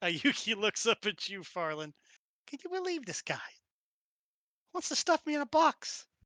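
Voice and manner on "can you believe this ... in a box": put-on complaining Brooklyn-accented voice, pitched up. A character looks up and speaks to another player's character, in a Brooklyn accent. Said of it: "I don't know why I'm Brooklyn again".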